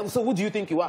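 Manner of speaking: normal talking voice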